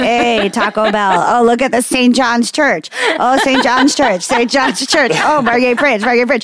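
mock old man voice, calling out each item.

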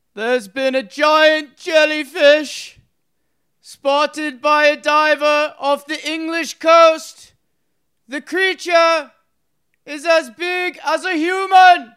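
very high, loud, grand declaiming Roman orator voice. Reading a news headline aloud when asked, in a roman orator voice. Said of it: "In your Roman orator voice".

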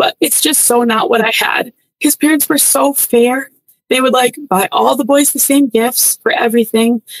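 moved, feeling-filled delivery. Describing how someone's parents treated all the boys fairly: getting emotional. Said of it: "I'm getting emotional".

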